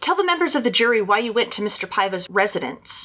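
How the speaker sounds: normal talking voice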